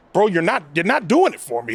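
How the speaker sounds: ordinary talk, nothing marked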